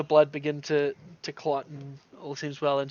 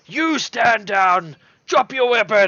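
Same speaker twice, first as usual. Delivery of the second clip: barked, high, loud shout; 6 semitones higher than usual. Game master voicing a character mid-fight, shouting a command. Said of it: "and he shouts".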